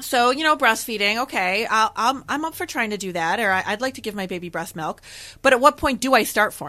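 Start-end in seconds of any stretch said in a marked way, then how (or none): none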